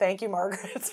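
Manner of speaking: flat, expressionless delivery. Describing the scene where Margaret speaks to Truman, Truman's deadpan reply, retold. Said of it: "Truman gets like a perfect deadpan response".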